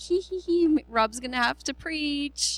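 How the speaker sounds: put-on gleeful giggling. Speaker recounts reacting to news that someone wasn't coming, re-enacting laughing. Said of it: "I started laughing and going".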